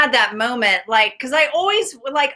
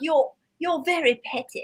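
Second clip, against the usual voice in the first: unhurried put-on British accent; 3 semitones higher, 7 dB quieter than usual. Retelling what a friend said: imitating a friend's british accent. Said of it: "I had this friend with a British accent".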